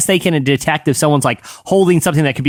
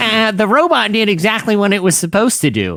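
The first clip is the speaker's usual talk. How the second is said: over-the-top, exaggerated big nerdy reading voice; 4 semitones higher than usual. Reading a released statement aloud, in a big nerd voice. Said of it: "I'm going to read it in a big nerd voice".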